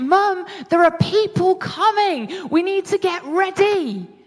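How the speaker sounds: loud, shouted voice. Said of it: "I shout at my mum".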